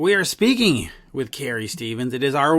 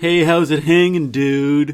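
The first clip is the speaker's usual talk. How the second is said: loud, laid-back California surfer dude voice. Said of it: "yours is more like".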